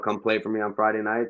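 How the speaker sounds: normal talking voice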